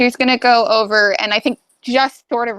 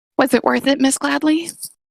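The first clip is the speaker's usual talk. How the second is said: whisper, higher and faster; 5 semitones higher than usual. Leaning in with a hand on May's shoulder, a character speaks to her: whispering. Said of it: "she'll whisper".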